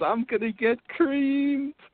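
gleeful, giddy, very high-pitched voice. Recalling a shaving commercial, the speaker quotes its line, mimicking Joe's giddy voice. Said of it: "in his giddy voice says".

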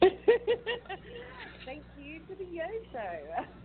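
lovely British accent, very high-pitched and swooping. Saying thank you to the show when asked, in a british accent. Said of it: "in your lovely b-, British accent, can you say".

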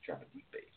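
very quiet, barely voiced, soft secretive whisper. Giving a quick fishing tip to the others: whispering. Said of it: "he kinda whispered that".

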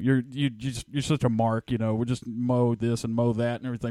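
plain

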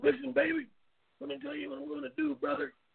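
very high, rough, creaky, rough-edged voice. Showing how someone talks like Hulk Hogan: Hulk Hogan voice. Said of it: "He talks a lot like Hulk Hogan".

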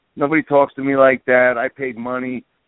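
ordinary delivery

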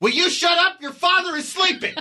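mock, very high-pitched, frustrated and angry scolding. Recounting how her hushing escalates, imitating her: mock-frustrated, angry. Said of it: "her frustration, anger, and she goes".

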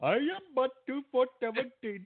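very high, mock Indian voice. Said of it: "your best I-, or, uh, Indian voice though".

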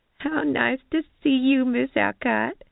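giggly, tittering, very high pitch. Reading a story, Nadine, one of the staff, greets their regular customer Miss Alcott: tittering. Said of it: "Nadine tittered".

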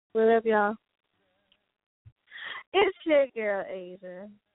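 put-on sultry, seductive, sexy voice. Greeting the listeners and giving a name: put-on sexy voice. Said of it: "try to put on my sexy voice".

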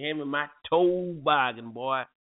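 put-on bossy, commanding grandfather voice. Arguing about how to say toboggan, the speaker says it like Granddad: imitating Granddad. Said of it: "just like Granddad would say".

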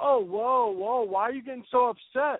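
slow, high, drawn-out taunting put-on voice. Retelling an argument with a man who commented on their page, mocking imitation of him. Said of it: "he starts with this bullshit like".

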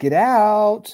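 put-on high sing-song little-kid voice, last word stretched. Imitating how the young girl's voice in the clip says it: sing-songy voice. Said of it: "just the way she says it".

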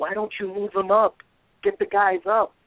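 acted, very high-pitched, shrill screaming. Retelling watching a defensive play at home: retelling own screaming at TV. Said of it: "And I'm screaming".

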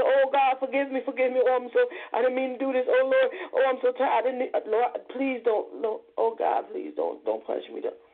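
weeping, sobbing, pleading tone, crying throughout. Preaching to brothers and sisters, speaker acts out begging God for forgiveness, mock crying. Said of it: "what you down there on your knees crying for and what you begging".

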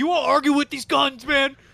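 high, very loud, blaring yell. Joking that Jim Harbaugh comes over: imitating Jim Harbaugh yelling. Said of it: "Jim Harbaugh comes over and yells at him".

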